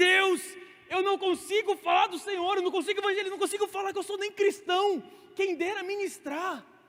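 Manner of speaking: loud, high, desperate crying. Speaker retells praying to God while crying in despair, retelling desperate crying. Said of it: "eu chorava de desespero".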